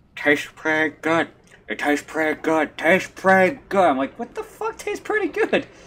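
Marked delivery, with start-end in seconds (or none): 0.2-3.9 put-on cartoon voice, at a slower pace. Retelling a man in a dream repeating himself, talking out of the side of his mouth like Johnny Bravo. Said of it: "he was talking out the side of his mouth like Johnny Bravo".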